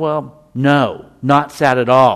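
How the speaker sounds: mock very angry voice. Explaining tone of voice, acting out someone's reply in a mock very angry voice. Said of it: "Said with a very angry voice".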